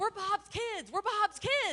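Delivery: put-on very high, desperate, frantic child's shouting. Retelling teenagers caught by a neighbor with a shotgun: imitating kids yelling. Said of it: "And they just yelled".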